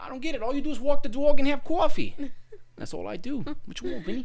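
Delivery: mock New York woman's voice.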